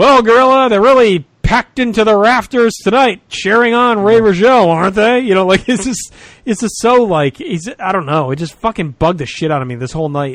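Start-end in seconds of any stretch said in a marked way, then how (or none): 0.0-5.2 booming, pitched-up announcer voice. Complaining about a wrestling broadcast, imitating the announcer: booming Gene announcer impression. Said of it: "boom booming bombastic announcer voice".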